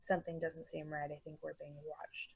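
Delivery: very quiet, hushed, wary, cautious half-whisper. Speaking in character to a companion, sensing being watched: half-whispering. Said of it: "I kinda whisper to him".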